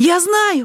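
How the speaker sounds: very high, eager, excited outburst. A boy talks to a man who was on Mars, exclaimed. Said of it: "воскликнул мальчик".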